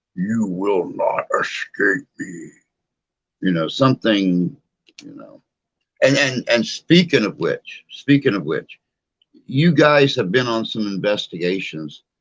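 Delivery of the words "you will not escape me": low, deep, ghostly spirit-box voice. Imitating a voice coming through a spirit box: deep voice. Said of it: "a deep voice or something".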